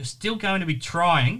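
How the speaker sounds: trying stressed, drawn out slowly. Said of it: "I do underline the word trying".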